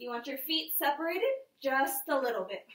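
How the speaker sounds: voice breaking partway through the line. Leading listeners through toe-tap exercises, giving a form cue, voice cracking. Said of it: "My voice cracked".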